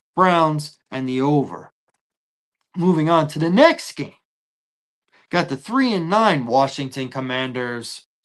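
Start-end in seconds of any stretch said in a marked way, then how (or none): 6.5-8.0 low, deadpan, level monotone with no inflection. Naming a team with a corny name, in a flat monotone. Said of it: "I have to say it like that, ... So I got to say it monotone".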